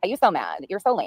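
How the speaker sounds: mocking valley girl voice. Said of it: "Why is she talking like a valley girl?".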